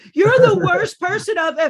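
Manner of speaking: shrill, very high, full-volume screaming. Recounting a woman pushing her way out of a tent, retelling her screaming. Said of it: "she's just screaming at me".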